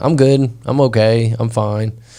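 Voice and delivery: ordinary talk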